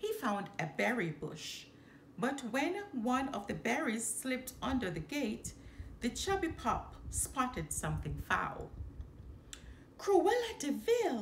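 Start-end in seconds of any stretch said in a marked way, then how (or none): 10.0-11.2 high, gasping, caught-breath exclamation. Narrator voicing the pup Raleigh spotting something under the gate, gasped. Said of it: "he gasped".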